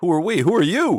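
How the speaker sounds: shrill, very loud, high-pitched shouting. Ren calls back across a huge room to a voice, yelling. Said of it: "Ren yells across the chasmous room".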